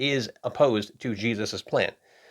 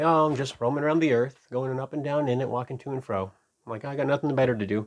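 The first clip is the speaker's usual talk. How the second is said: listless, put-on bored voice; 3 semitones higher than usual. Showing how many read Satan's reply to God: mock bored Satan voice. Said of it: "I don't think he's bored".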